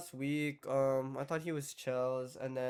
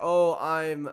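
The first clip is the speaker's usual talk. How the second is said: put-on shy, nonchalant, offhand tone, louder; 8 dB louder than usual. Retelling how a guy introduced himself: imitating someone shy and nonchalant. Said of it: "in, like, a really kinda shy, nonchalant way".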